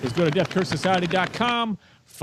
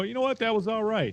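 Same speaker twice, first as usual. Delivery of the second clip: mock generic, bland, noncommittal tone, pitched up; 5 semitones higher, 4 dB quieter than usual. Retelling what they said to their wife after a movie: imitating own generic reaction. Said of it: "I've been saying it like that".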